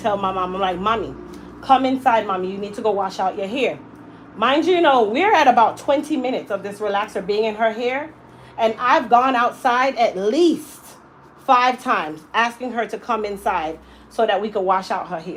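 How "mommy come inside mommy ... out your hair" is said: usual speaking voice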